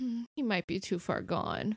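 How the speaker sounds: very quiet, soft, weary sighing murmur. Voicing Penny during a game scene: sighing as Penny. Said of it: "Penny sighs and says".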